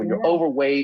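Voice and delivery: play-acted, patronizing doctor's condescending tone. Retelling what a doctor said about his weight: imitating a condescending tone. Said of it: "he was very condescending".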